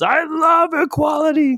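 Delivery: pumped-up, intense burst, very high-pitched. Retelling a made-up scene, imitating a jacked-up Dan Campbell. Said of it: "gets jacked up and just veins popping out and says".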